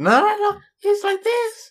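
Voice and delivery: very high, fake female voice, put on. Asked if it's just their normal voice, the speaker shows their put-on woman voice. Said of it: "my woman voice".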